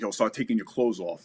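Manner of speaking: ordinary talk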